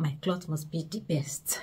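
soft, slow, whispered inner voice.

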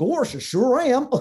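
silly, goofy, high-pitched cartoon dog voice. Retelling how he answered people asking if he was Goofy, Goofy voice. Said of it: "He goes".

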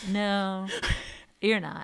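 acted flat, deadpan delivery. Retelling how Mia answered her bragging to the national team, imitating Mia's deadpan. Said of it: "In her deadpan way".

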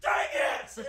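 full-volume, very loud screaming. Retelling how a roommate yelled after dying in a game: imitating a roommate yelling loudly. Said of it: "just as loud as he can".

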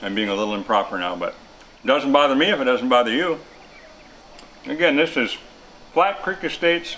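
talking while chewing, mouth full of food. Speaker tasting wines, talking to the listener, talking with mouth full. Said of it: "I'm still trying to chew this thing".

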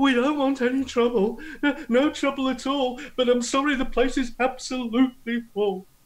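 very high, terrified, frightened pleading tone. Narrator voicing the marshal after his comrade crumbles to the ground: terrified. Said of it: "The marshal is so absolutely terrified".

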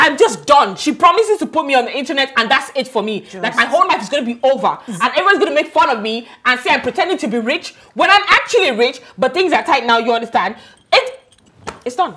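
very loud, frantic panicked rant full of dread. Told she will be exposed online, the speaker frets aloud: panicked and agitated. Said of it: "can you just calm down?".

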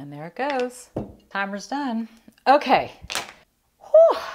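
winded, out-of-breath talk. Finishing a timed makeup challenge as the timer goes off, out of breath. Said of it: "let me catch my breath here".

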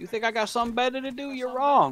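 high, loud, mocking taunt.

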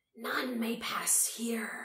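slow, drawn-out hiss. The keeper, preparing to spring again at those before it, hissed. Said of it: "hissed the keeper".

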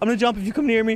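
desperate, high, loud, panicked shouting.

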